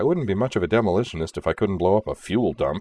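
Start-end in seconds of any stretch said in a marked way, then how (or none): none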